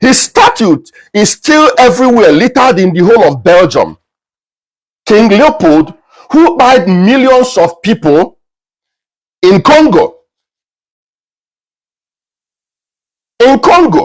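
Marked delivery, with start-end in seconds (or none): 5.0-14.1 heated, worked-up, growing in intensity. Speaking about King Leopold's crimes in Congo, getting heated. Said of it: "let me calm down".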